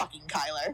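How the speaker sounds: loud, low growling voice. Voicing a character cursing aloud in anger: growled curse. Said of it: "growl out loud".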